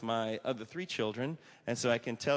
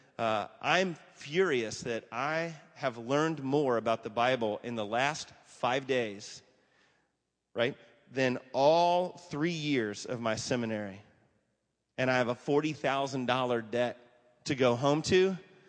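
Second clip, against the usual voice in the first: ordinary talk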